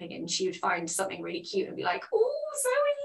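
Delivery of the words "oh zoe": put-on sweet, excitable voice, higher. Retelling how a mum reacts to something cute: imitating sweet excitable mum. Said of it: "the sweetest, like, excitable way".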